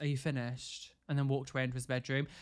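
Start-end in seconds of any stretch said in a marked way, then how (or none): 0.0-0.9 mock smarmy, smug, dismissive tone, quieter. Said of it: "smarmy look on his face".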